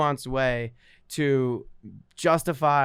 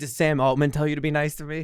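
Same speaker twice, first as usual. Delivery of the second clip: usual speaking voice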